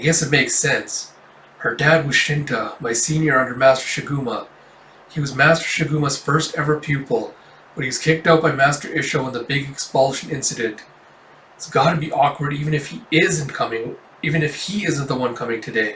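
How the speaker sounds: ordinary talk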